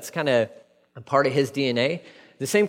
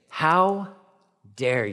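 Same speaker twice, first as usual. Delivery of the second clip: mock indignant, outraged tone full of disgust. Acting out critics scolding Peter again: imitating a disgusted question. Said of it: "you can sense the disgust in that statement".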